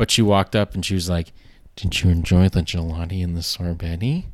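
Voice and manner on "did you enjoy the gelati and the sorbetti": timid, demure, shy, bashful little voice. Retelling the waitress asking about dessert: imitating a bashful-sounding waitress. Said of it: "talk as if she was being very bashful".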